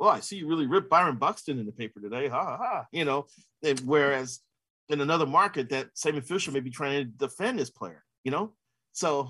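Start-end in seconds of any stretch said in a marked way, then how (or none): none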